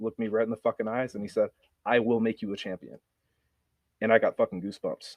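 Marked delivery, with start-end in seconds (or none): 1.9-3.0 mock confident, assured delivery. Retelling a coach's promise, imitating someone saying it confidently. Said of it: "he said it with pure confidence".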